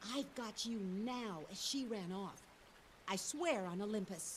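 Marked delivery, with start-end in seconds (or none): 0.1-1.4 put-on muttering under the breath. Speaker recounting what a woman said as she ran off, retelling a mutter under breath. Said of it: "I heard her say under her breath".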